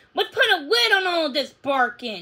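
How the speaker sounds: sharply snapped, snapping. A man reacts to the dogs' barking, snapping. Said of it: "He snapped".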